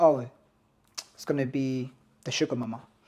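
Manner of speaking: flat, deadpan delivery. Retelling his line to restaurant staff when she pays, deadpan. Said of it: "But he says it like deadpan".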